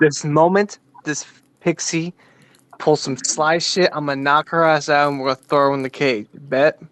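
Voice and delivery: scheming stage half-whisper. Telling the other players a secret plan against the pixie: half-whispering. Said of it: "I whisper this".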